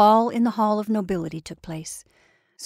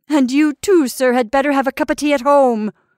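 loud called-out voice; 4 semitones higher, 6 dB louder than usual. A mother calls after the departing narrator, shouted after someone. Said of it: "she shouted after me".

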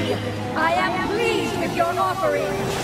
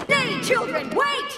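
full-throated, high, screaming royal bellow; 7 semitones higher than usual. A princess calls out to the children to wait; shouting. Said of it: "Watch the screaming!".

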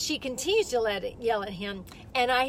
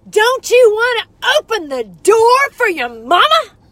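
screeching, shrill, very high, very loud yell; 10 semitones higher, 15 dB louder than usual. Speaker recounts a woman publicly yelling at her young son: retelling a mother's yell. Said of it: "she's yelling".

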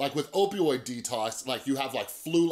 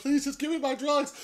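mock tearful sobbing, pitched way up; 13 semitones higher than usual. Retelling what a drug addict said when held hostage, imitating someone crying. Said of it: "He's like crying".

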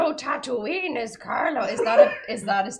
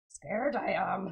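put-on creature voice, lower pitch and quieter; 4 semitones lower, 7 dB quieter than usual. In a drinking game, a player must talk like Yoda until their next turn; Yoda voice. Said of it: "You must talk like Yoda until your next turn".

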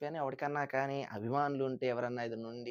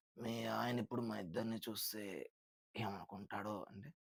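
husky film-hero voice, much lower, quieter; 5 semitones lower, 10 dB quieter than usual. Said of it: "ఒక husky వాయిస్తో మన కమల్ హాసన్ అంటాడు".

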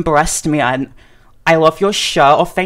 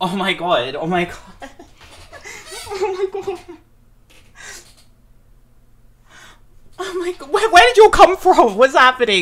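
very high, rising, overwhelmed disbelief, freaking out; 11 semitones higher than usual. Reacting as someone suddenly appears on the YouTube homepage: freaking out. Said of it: "I'm freaking out".

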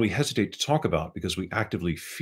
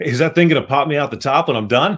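very loud, raised barroom banter voice; 8 semitones higher, 9 dB louder than usual. A tense narrator who can't hear their own voice jokes in a bar voice. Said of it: "so I tried joking in a bar voice".

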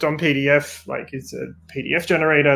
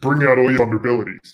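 menacing evil villain voice; 2 semitones lower, 4 dB louder than usual. Asked by the host to do his hacker voice, in an evil hacker voice. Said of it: "let me turn off the evil voice".

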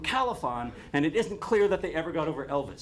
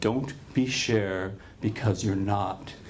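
put-on patronizing, protective tone, much slower; 8 semitones lower than usual. Speaker retells what a man said to him, retelling a patronizing, protective tone.

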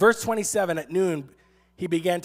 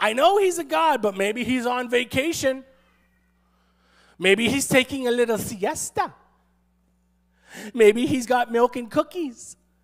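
needling, mocking tone, pitched up; 6 semitones higher than usual. Retelling a story, the speaker acts out a man taunting the others: acting out a mocking taunt. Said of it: "He's taunting".

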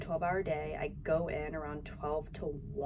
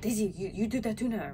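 put-on terrible French accent, pitched up; 5 semitones higher than usual. Recalling what her chef said to her after taking over, terrible French accent. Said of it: "that was my French accent, that was terrible".

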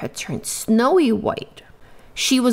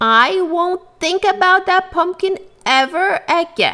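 firm, outright, pitched-up delivery; 9 semitones higher, 3 dB louder than usual. A narrator reads a woman shoveling dirt over pumpkin pieces, declaring. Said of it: "she declared".

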